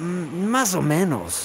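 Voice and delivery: soft murmur under the breath, Más drawn out. A worker answers the foreman about missing work, murmuring. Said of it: "musitó Mezclador".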